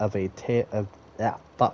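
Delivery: ordinary delivery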